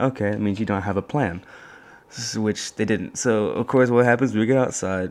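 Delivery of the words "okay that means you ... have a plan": usual speaking voice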